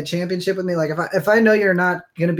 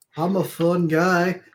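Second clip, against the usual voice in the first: mock-deadpan, flat, unexcited put-on voice. Mocking someone's creepy line, a speaker repeats it: imitating a flat unexcited voice. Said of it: "Can you at least sound like a little excited".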